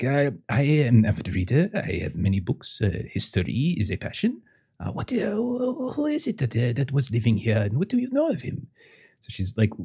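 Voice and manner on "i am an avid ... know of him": put-on French accent, higher pitch. A player voices Veronique speaking to another character; Veronique's French accent. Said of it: "I got one French accent".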